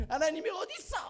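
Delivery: high, loud sulky outburst, blurted out. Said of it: "싫을 때는".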